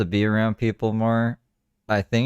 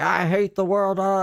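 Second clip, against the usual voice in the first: mock tipsy, slow, pitched-up, moody griping tone; 9 semitones higher than usual. Retelling how a drunk woman at Bike Week greeted people: imitating a drunk woman. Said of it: "she was drunk".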